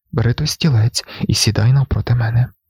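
ordinary delivery

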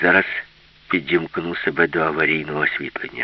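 usual speaking voice

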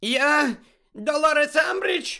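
shrill, scared exclamation. Reading a novel, the headmistress answers a centaur who demands her name: shrill frightened shout. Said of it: "вигукнула директорка пронизливим переляканим голосом".

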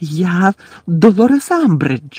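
piercing, shrill, terrified cry. The headmistress answers a centaur demanding who she is, shrill, frightened voice. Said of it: "вигукнула директорка пронизливим, переляканим голосом".

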